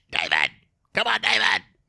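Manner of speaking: very deep, low, dropped character voice. Imitating an actor's line from Independence Day: Harvey Fierstein voice. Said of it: "Talks like that".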